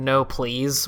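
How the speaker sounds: mock pleading voice, fading away. Describing a game character as he disappears: imitating a fading plea. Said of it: "while fading away".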